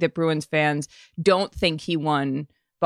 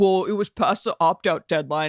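put-on Weymouth local guy voice; 3 semitones higher than usual. Voicing fans mad at players over the opt-out deadline: Sully from Weymouth voice. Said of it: "Whose voice are you doing right there".

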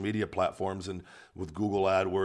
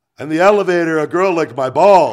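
mock drunk man voice, higher and louder; 8 semitones higher, 15 dB louder than usual. Retelling a drunk man's New Year's TV interview answer: imitating a drunk man. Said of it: "just completely just hammered".

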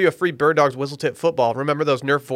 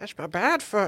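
high, soft, put-on elderly voice; 6 semitones higher, 7 dB quieter than usual. Making a joke on another speaker's phrase, in an old person voice. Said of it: "Why do an old person voice?".

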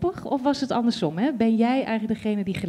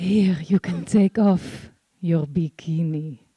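low, hoarse, smoldering, drawn-out, sultry husky voice; 5 semitones lower than usual. Showing how the line should sound, in a hoarse, sultry voice. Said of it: "met zo'n hele heze stemmen van die broeierige... Zo".

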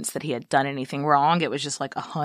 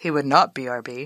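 narrator voice, much lower pitch; 3 semitones lower than usual. Cutting into a story about Olivier leaving Jeannie: narrator voice. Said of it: "Narrator voice".

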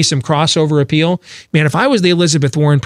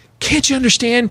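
mock imploring, begging voice; 7 semitones higher than usual. Recounting a news clip where a reporter begs an interviewee, imitating begging. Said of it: "she's like begging him".

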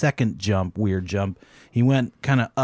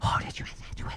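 very quiet, barely voiced whisper. Retelling how everybody on the set reacted: imitating people whispering. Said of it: "Everybody's whispering and tittering around".

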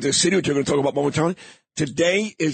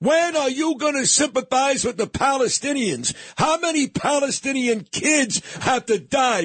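put-on high kid voice, yelling and screaming; 8 semitones higher than usual. Retelling a kid's shouted questions: imitating a kid yelling and screaming. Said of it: "who's yelling and screaming".

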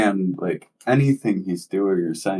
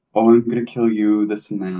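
mock screaming, louder; 4 dB louder than usual. Recounting a man standing at the corner of the parking lot: retelling a scream. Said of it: "he just like screams out like".

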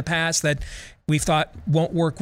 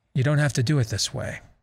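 disappointed, calm, mellow yet stern, firm voice; 2 semitones lower than usual. Retelling what a man told a fake faith healer in front of everybody, mellow but stern. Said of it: "in a mellow but stern voice, the voice of a disappointed father".

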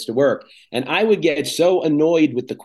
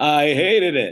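cheesy, knowingly corny, self-aware, ironic throwaway tone. Retelling own joke reply to a customer question: retelling own cheesy ironic reply. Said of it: "I do the cheesy response".

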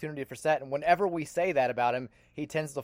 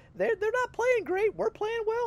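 squeaky cartoon mouse voice, much higher. Talking about the team's hopes as the season reaches November, Mickey Mouse voice. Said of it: "I'm using the Mickey Mouse voice".

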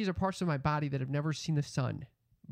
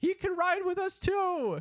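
very high, yelled, acted-out shout; 4 dB louder than usual. Retelling a guy shouting back at a man yelling, retelling a shout. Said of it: "shouts back".

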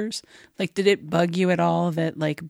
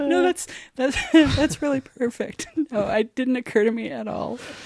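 crying with laughter, higher; 7 semitones higher than usual. Reacting to another speaker's joke, laughing to tears. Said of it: "See, that made you cry".

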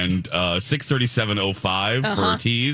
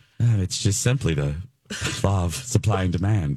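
put-on whisper, lower; 3 semitones lower than usual. Retelling what Alexis said in the middle of this: imitating Alexis whispering. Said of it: "she just whispers".

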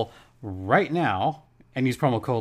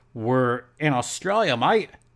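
poor, fake attempt at an Australian accent. Talking about the la kings players, in a terrible australian accent. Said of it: "that was a terrible Australian accent".

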